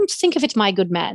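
put-on old-fashioned Victorian gentleman voice. Describing a man obsessed with Dickens, talking like Charles Dickens. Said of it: "he likes to talk like Charles Dickens".

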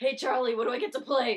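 very loud, high-pitched character shout. Retelling a TV scene, doing the troll character: Danny DeVito impression. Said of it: "You do a really good Danny DeVito impression".

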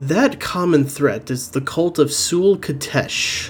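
voice brought right down, low. A Dark Dagger Gang member leans in toward the group, in a lowered voice. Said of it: "he just sort of lowers his voice".

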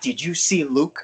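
put-on, extremely excited, giddy little-kid voice. Retelling what he asked after watching the episode: imitating a kid-like excitement. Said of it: "He was like a little kid, extremely excited".

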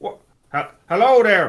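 put-on loud Southern Cornwall bumpkin accent. Imitating an actor's odd accent as young Arthur: imitating a Southern Cornwall bumpkin accent. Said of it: "like a bumpkin from, from Southern Cornwall".

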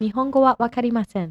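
native-like, authentic Japanese pronunciation. Saying a japanese phrase for another speaker: native-like japanese accent. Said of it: "teach me in a really great accent".

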